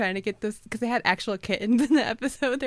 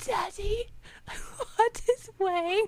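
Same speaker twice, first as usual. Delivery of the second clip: very high, slow, raspy fish creature voice; 10 semitones higher, 3 dB quieter than usual. Quoting the fish creature's line from the episode: imitating the fish creature's raspy voice. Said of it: "It was the voice. ... raspy".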